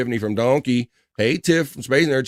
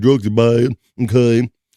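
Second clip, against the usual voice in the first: put-on cartoon voice, slow, drawn out, raised; 5 dB louder than usual. Falling back on a similar voice to find another one, in a Mister Mackey voice. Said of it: "I fall to Mister Mackey".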